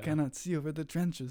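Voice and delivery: put-on Quebecois French accent. Quoting a friend from planting camp: imitating Charles's Quebecois accent. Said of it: "Charles's accent".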